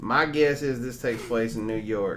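acted southern American accent. Reading out a username's comment with a southern American accent. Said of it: "I'm going to read this with a southern accent".

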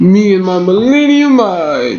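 loud, high, swooping, sing-song hammy villain voice. Trying to freak someone out during a card game, a bad Pegasus impression. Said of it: "That's a very bad Pegasus impression".

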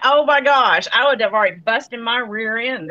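ordinary talk, nothing marked

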